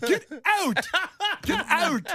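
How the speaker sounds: put-on very high, slow, drawn-out angry yell, Canadian accent. Retelling how the man yelled at the golfer: imitating an angry Canadian yell. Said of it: "even the Canadian accent comes out when you're mad. He goes".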